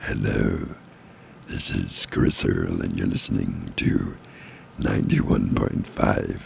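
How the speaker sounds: low, creaky, spooky voice. Radio host doing a Halloween station ID for listeners, spooky voice. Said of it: "Spooky voice".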